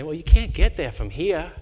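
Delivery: really bad, badly done Boston accent. Retelling what someone says when asked for directions, in a bad boston accent. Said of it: "that's my really bad Boston accent".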